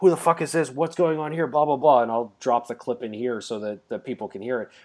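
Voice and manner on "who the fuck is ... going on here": play-acted ranting, raving outburst, voice up high. Retelling the end of Dogma, imitating Jay yelling. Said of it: "he's just yelling like".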